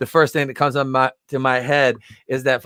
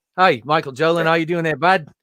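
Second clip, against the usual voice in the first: put-on New Zealand accent; 4 semitones higher than usual. Doing a bit, greeting the other speaker; Taika Waititi Kiwi accent. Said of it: "do my do my Kiwi accent there".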